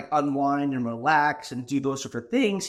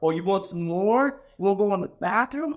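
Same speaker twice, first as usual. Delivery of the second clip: put-on drunk man voice, higher; 6 semitones higher than usual. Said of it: "Couple dudes really drunk".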